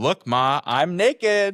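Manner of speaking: very high, slow, drawn-out mocking yell. Retelling what a woman in the bathroom yelled out: imitating someone yelling mockingly. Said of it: "she yells out, mocking me".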